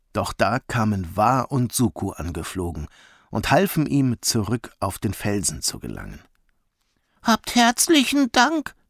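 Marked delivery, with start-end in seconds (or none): 7.2-8.6 very high, out of breath, panting. Narrator reading a character thanking the two who helped him back onto the rock, panting. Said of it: "keuchte Umph".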